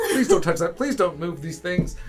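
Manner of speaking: loud shouting. Voicing a traveler arguing over luggage: yelling at each other. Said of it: "they're yelling and stuff".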